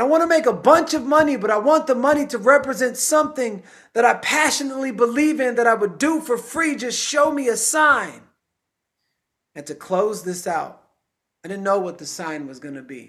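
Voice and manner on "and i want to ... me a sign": play-acted, very high, desperate screamed-out cry. The speaker re-enacts what they once screamed out: retelling a scream. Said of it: "I just screamed out".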